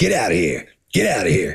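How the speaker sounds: put-on raspy old smoker's seal voice. Retelling what a seal on the news would say: imitating a seal like an old smoker. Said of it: "eighty years old and has been smoking".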